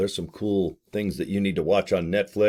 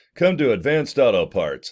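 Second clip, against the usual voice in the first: put-on radio announcer voice, as in an ad read; 3 semitones higher, 3 dB louder than usual. Plugging an auto parts shop in Sandy, Utah, in a radio announcer voice. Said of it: "This is my radio voice".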